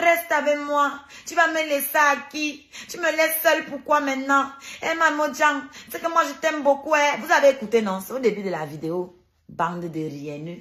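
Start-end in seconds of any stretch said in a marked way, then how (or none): 0.0-6.9 high-pitched, pleading, begging voice. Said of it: "Comment elle me suppliait".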